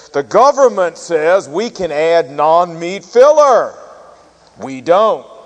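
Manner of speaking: big commercial voice-over announcer voice. Speaker recounts a hot dog commercial with Uncle Sam, big commercial announcer voice. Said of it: "you hear this big voice that says".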